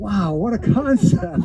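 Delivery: slow sarcastic mock amazement.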